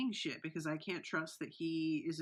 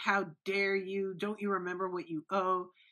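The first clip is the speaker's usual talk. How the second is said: mock screaming; 2 semitones higher, 4 dB louder than usual. Praising a performance, recalling how the daughter screamed at him: imitating someone screaming. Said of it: "who was screaming at him".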